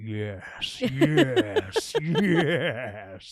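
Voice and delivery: cartoonishly evil voice, each yes stretched and swooping. Describing Megatron from Beast Wars, doing Megatron's cartoonishly evil voice. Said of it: "cartoonishly evil voice. He'd be like".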